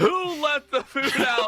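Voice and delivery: put-on very high, shrill, loud yelling. Comparing a team's reaction to a mom coming down: imitating a yelling mom. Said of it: "the mom that came down yelling at you".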